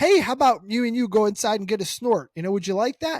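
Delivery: sweet, friendly, coaxing voice. Retelling how a movie character coaxes a dog: imitating someone being nice. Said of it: "And he's all nice".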